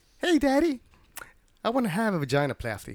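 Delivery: put-on young girl voice. Acting out what a significant other might say, voicing her like a 12-year-old. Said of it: "Why does she sound 12".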